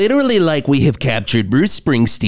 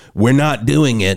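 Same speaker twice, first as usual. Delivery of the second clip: normal talking voice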